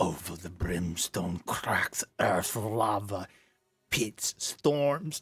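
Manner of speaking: rough, scratchy, raspy character voice. Answering a player's question about a race, the speaker uses a scratchy voice. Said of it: "with his scratchy voice".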